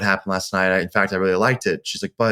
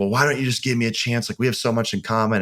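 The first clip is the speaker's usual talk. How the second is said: mock agitated woman voice, higher pitch; 2 semitones higher than usual. Retelling a woman's words as she pressed for a chance; imitating an agitated woman. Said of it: "getting agitated".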